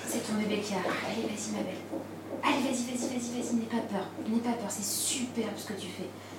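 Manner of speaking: soft, high-pitched, calm, steady encouraging tone.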